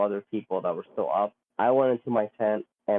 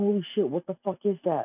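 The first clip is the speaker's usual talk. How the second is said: play-acted, very high-pitched, panicked, freaked-out outburst; 10 semitones higher than usual. Retelling friends seeing a light in the sky: imitating friends freaking out. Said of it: "they both freaked out".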